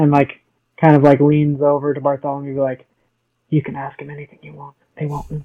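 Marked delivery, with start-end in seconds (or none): 3.5-4.8 very quiet hushed whisper, quieter. A character leans over to Bartholomew to speak; very quiet hushed tone. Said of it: "very quietly, hushed tone".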